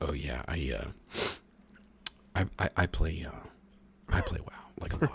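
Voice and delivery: barely audible, hushed, stumbling, halting whisper. Acting out a gamer friend admitting to playing WoW: imitating someone whispering. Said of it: "Why are you whispering?".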